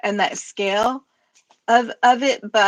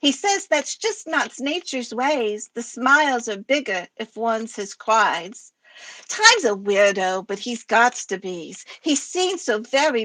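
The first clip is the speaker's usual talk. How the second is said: cutesy kitty character voice. Reading their own poem aloud to the group, in Sparkalicious Vamp Kitty BGC voice. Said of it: "written in my Sparkalicious Vamp Kitty BGC voice".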